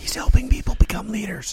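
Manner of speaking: high-pitched, whispered aside.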